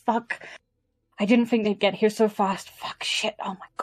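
muttered cursing under breath. Voicing a character as the group describes him, cursing under his breath. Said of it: "cursing under his breath".

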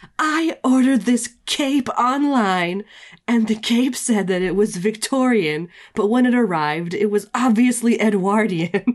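screaming high-pitched rant. Describing a game character screaming at a cashier, imitating someone yelling. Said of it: "he's like yelling at the cashier".

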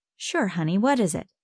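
ordinary delivery

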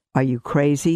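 sneering, sneered voice. A man leaning against a pole, asked if he has a job, sneers. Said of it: "sneered the other".

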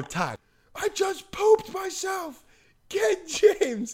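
mock shrill yell, way up high. Telling a story about an accident, the speaker reenacts what they yelled: retelling a yell. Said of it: "I yelled it to him".

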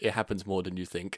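very quiet, unbothered deadpan. Speaker retells a worker's answer to their question, imitating a deadpan reply. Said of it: "deadpan, without even batting an eyelid".

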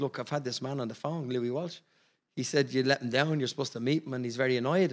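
ordinary delivery

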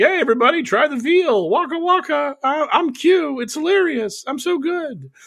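very high, corny stand-up comic patter. Mocking the guy posting as q on a website: mocking dumb q posts. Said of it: "the Q on their site is so dumb. He's, like, literally like".

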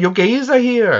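put-on failed Welsh accent. Talking about the film Pride, quoting a line from it in a bad Welsh accent. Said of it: "I can't do a Welsh accent".

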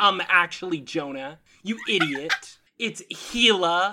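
put-on smug pedant voice.

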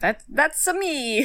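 put-on Italian accent. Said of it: "not an Italian voice".

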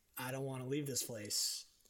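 mock tearful voice. Retelling a younger brother's words at parting: imitating someone in tears. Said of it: "in tears".

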